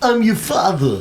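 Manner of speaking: high, loud, dramatic delivery. Trying out a Christopher Walken impression of Darth Vader. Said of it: "Christopher Walken doing Darth Vader would be good".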